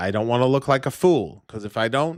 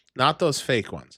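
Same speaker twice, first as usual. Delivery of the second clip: normal talking voice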